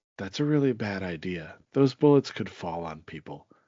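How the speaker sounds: mock completely straight, matter-of-fact, no-fuss delivery. Recounting what the speaker's daughter said during a movie scene, retelling a deadpan remark. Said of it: "my daughter just straight deadpan was like".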